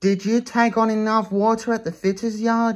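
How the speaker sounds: kind, gentle voice with gently rising pitch. Narrator reads one engine's question to another, asked kindly. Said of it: "He asked kindly".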